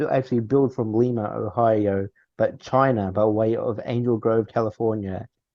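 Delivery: normal talking voice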